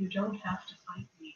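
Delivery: close, hushed half-whisper, very quiet. Voicing a character leaning down to a player: half-whispering into ear. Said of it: "he leans down and whispers into your ear".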